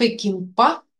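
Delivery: Пекинпа with final -па stressed, rising pitch.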